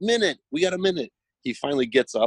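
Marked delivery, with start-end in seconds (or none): 0.0-1.1 high-pitched, shouted yell. Recalling urging someone who wasn't getting up: retelling a yell. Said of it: "And I'm yelling".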